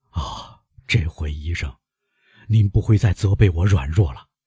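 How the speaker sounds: ordinary delivery, nothing marked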